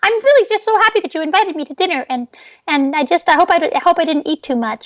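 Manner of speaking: tiny, very high, squeaky insect voice. Making an insect from a salad talk at dinner, in a little insect voice. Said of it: "Like in a little voice like this".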